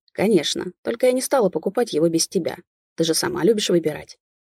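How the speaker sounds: plain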